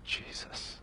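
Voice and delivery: soft unvoiced whisper, the word Jesus breathed out. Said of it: "the shortest, quickest, easiest prayer is".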